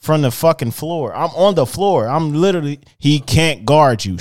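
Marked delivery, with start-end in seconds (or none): 3.0-4.1 loud hollering yell. Speaker recounts shouting at opponents during a game, acting out what was yelled. retelling a yell. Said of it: "I'm yelling".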